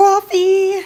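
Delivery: thick Jersey accent on coffee. Saying a word on purpose in an accent: New Jersey accent on coffee. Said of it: "I said the New Jersey accent on purpose this time".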